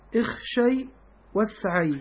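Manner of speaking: normal talking voice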